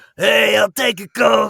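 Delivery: very loud, belted, rough-edged, high voice. Imagining an actress buying a Coke: Natasha Lyonne voice. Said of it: "what if Natasha Lyonne was trying to buy a Coke?".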